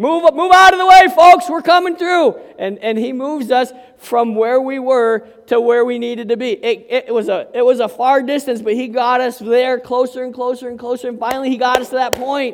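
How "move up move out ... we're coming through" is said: loud, high, clear yell. Retelling a cart driver clearing the way: imitating a cart driver yelling. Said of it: "He's yelling".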